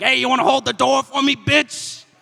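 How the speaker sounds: put-on shrill, very high, loud, angry old lady voice.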